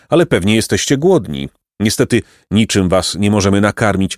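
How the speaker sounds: plain reading voice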